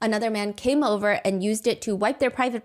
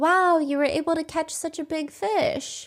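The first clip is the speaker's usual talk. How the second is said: mock gentle, encouraging approval with raised pitch; 7 semitones higher than usual. Retelling how Uncle Red responded to a man's freshly caught fish, imitating his soft, encouraging voice. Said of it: "in his soft voice was an encouraging".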